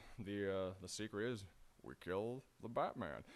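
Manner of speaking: put-on low drawl. Speaker imagines the Joker as an old-Western figure, in a John Wayne slight southern drawl. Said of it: "slightly southern drawl".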